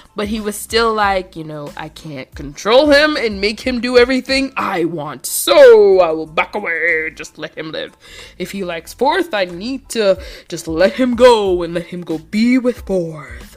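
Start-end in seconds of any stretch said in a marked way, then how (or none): 1.8-13.6 put-on, acted deep voice. Acting out a show character's inner thoughts: put-on deep voice. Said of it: "I'm giving him a deep voice".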